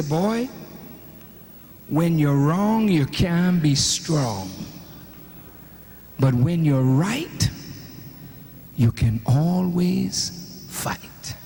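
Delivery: deep, very low-pitched West Indian lilt. Quoting the mother's saying after a spanking, in her West Indian accent. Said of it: "she would say".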